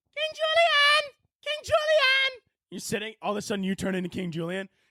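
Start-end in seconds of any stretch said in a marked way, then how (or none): 0.2-2.4 shrill, very high, slow, stretched-out scream. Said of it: "starts screaming at you".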